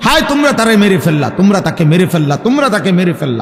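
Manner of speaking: plain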